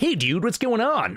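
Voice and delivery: put-on high-pitched American accent. Mocking a fantasy game's voice acting, imitating Huey's high-pitched American accent. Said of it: "high-pitched American accent".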